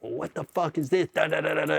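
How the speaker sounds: rasping, rough, high-pitched raging angry yell. Retelling how a guy launched himself across his desk: imitating someone yelling. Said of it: "He's yelling at me".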